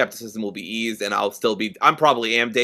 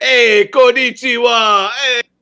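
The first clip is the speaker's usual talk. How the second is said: put-on New York Italian gangster accent, much higher, louder; 13 semitones higher, 10 dB louder than usual. Joking about new york italian gangsters speaking japanese in the game, new york italian gangster accent. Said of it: "Italian gangsters from New York like".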